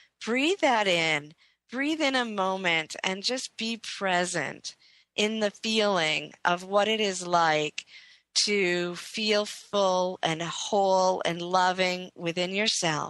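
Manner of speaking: unhurried, deliberate, slow, drawn-out guiding voice. Guiding listeners to breathe and be present, speaking slowly. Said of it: "I just want to slow down in my speaking".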